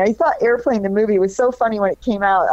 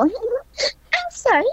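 very high, giggling, giggly airhead voice; 12 semitones higher, 4 dB quieter than usual. Recalling playing a character on radio tracks: giggling dumb blonde Trixie voice. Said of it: "I would giggle".

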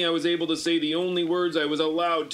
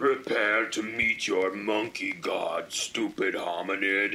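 very deep, slow, burbling, gurgling monster voice; 9 semitones lower, 3 dB quieter than usual. The fungaloid monster holds the narrator by the neck, gurgling monster voice. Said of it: "gurgled the fungaloid".

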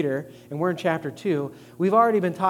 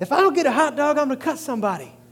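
shrieked, very high, shrill shout; 9 semitones higher than usual. Retelling what a hungry woman shouted at a zoo: imitating someone shouting. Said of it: "she was in the middle of shouting".

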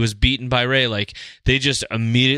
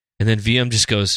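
ordinary delivery

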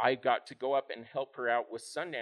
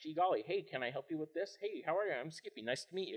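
put-on cheery, overeager, happy-go-lucky young voice; 4 semitones higher, 4 dB quieter than usual. Retelling own past words as an eager young volunteer: imitating own happy-go-lucky younger self. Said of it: "me being just this happy-go-lucky at the time".

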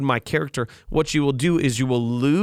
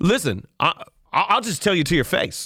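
put-on folksy good old boy voice; 3 semitones higher than usual. Continuing the quote of such people: imitating a good old boy voice. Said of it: "I'm just gonna continue with it".

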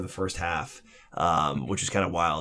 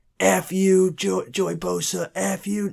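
mock man screaming, much higher, slower; 12 semitones higher than usual. Speaker retells a guy screaming at Joey Bosa on the sideline, imitating a man screaming. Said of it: "the guy just starts screaming".

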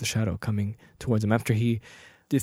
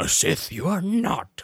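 put-on little alien master voice, higher; 5 semitones higher than usual. Retelling a movie duel scene, quoting the reply: Yoda voice. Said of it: "And then Yoda's like".

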